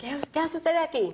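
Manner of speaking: very high, screamed shout in Spanish. Retelling spotting family at the front desk: retelling a scream in spanish. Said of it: "I scream out to them in Spanish".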